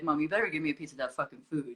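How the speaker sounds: bossy, demanding, low, mean talking dog voice. Describing the voice they gave their pet Barney, voicing Barney, mean. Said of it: "he was very mean. He'd be like".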